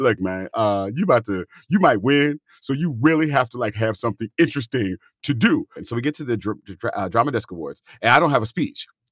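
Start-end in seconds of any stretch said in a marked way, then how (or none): 0.0-5.7 casual street-talk homeboy voice. Retelling a phone call before an awards show, imitating a friend's homeboy voice. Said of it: "his author voice to his homeboy voice".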